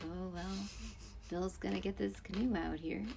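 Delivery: hushed, very soft, calming, soothing narrator voice. Describing a show's voiceover, soft soothing voiceover voice. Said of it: "he's talking in this very soothing voice, like".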